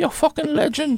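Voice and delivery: put-on Irish brogue, pitched very high. Asked by a panel member to repeat a eulogy quote, in a fake Irish accent. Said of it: "say it in your fake uh, Irish accent".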